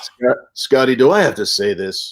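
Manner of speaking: slow, deliberate, drawn-out delivery. Retelling what an actor on set used to say: Miguel Ferrer voice. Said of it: "with that incredible voice of his".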